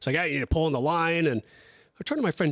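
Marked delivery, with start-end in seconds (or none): 0.2-1.3 bossy, light, sort-of put-on pirate voice. Retelling a boat owner's friend bossing him around: imitating pirate-like talk. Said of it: "he talked like a pirate too, kinda".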